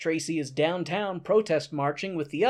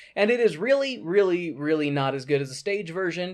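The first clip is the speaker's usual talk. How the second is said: normal talking voice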